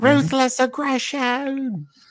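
high yelling in an Australian accent. Pitching a scene where she yells at him and walks out, yelling in Australian accent. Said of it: "she just yells in an Australian accent".

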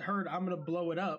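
ordinary delivery

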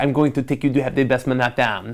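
put-on halting, choppy broken-English accent, non-native. Retelling what a friend's husband offered, in his broken English. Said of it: "in his broken English".

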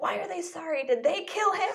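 very high, shrill, high-pitched yelling outburst. Retelling how a grieving grandmother yelled after hanging up the phone: imitating grandmother yelling. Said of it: "just yelling".

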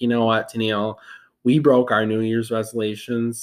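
ordinary talk

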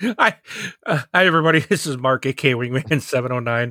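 words bubbling with laughter. Introducing himself after his buddy's intro, laughing while talking. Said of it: "I'm laughing".

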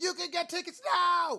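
fake bellow, very high, very loud and shrill. Retelling what a masked announcer said: imitating someone's fake yell. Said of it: "he does that, that fake yell".

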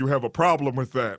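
put-on, very deep, deepest possible voice. Retelling a tv show character's lines, imitating a very deep voice. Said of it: "with the deepest voice you ever heard".

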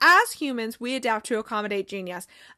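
ordinary talk

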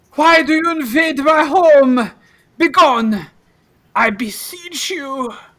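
cringing ghost voice, shrill, very high, very loud. Voicing a cringing ghost who orders the players out: cringing ghost voice. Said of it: "the apparition has a cringing light in his eyes, and it says".

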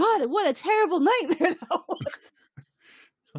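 acted out, very high, panicked outburst. Retelling a dream, acting out her waking up from the nightmare, mock-panicked. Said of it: "she wakes up like panicked".

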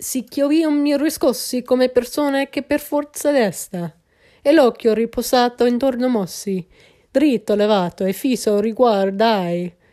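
badly pronounced, terrible Italian accent. Reading an Italian poem aloud to another speaker: terrible Italian accent. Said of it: "this terrible Italian accent".

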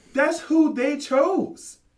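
high-pitched, rapid-fire, rattled-off delivery. Retelling what a woman said, imitating a woman's high voice. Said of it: "that's how high she got".

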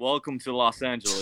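low, put-on American accent with British edges. Given a sentence to say, trying a typical American accent. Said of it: "Do a typical American accent".

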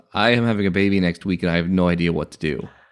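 ordinary talk

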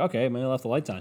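usual speaking voice

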